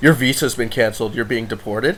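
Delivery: ordinary talk, nothing marked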